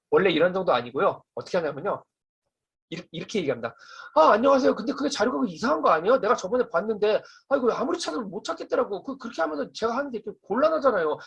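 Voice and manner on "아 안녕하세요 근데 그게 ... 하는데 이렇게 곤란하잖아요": fast, loud, high-pitched rattled-off nonstop chatter. Speaker demonstrates their normal everyday way of talking: loud, high, fast talk. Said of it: "목소리도 크고 목소리 톤도 높고 말이 굉장히 빨라요".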